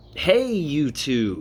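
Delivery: pitchman-style salesman voice. Greeting YouTube viewers, the speaker uses a salesman pitch voice. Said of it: "you like my salesman pitch voice".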